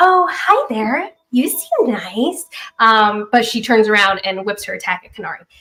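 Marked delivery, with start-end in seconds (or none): 0.0-2.4 put-on cute, sweet, girlish little voice, slow. Game master voicing a ten-year-old girl character addressing Thea, smiling little girl voice. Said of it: "she flashes a smile at you".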